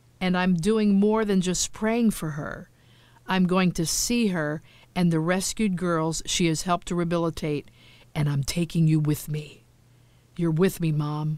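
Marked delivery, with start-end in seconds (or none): 10.4-11.4 soft murmur under the breath. Narrator addressing her mom, softly under her breath. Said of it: "I say softly under my breath".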